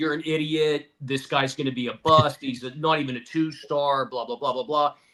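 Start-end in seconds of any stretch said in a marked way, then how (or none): none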